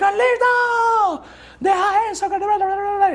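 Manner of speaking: scolding mother voice, high, slow and shouted.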